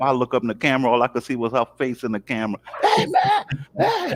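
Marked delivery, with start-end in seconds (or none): 2.8-4.1 put-on very high-pitched hollering. Retelling waking up on camera to Real screaming at him, imitating Real hollering. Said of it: "started screaming and hollering".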